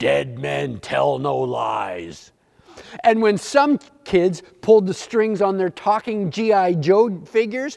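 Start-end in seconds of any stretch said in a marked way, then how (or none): 0.0-2.3 deep, slow, gravelly rasp, words drawn out. Telling how a talking Barbie got G.I. Joe's voice box: deep, gravelly Barbie voice. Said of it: "Barbie would say in a deep, gravelly voice".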